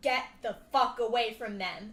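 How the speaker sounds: loud, booming, resounding, augmented voice. A player augments their character's voice for the second use: booming voice. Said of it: "your voice booms as you say that".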